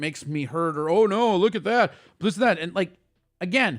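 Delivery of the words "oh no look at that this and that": snide, taunting, mocking, gloating voice. Retelling how a commenter comes at them: mocking imitation of a commenter. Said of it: "you're coming at me like".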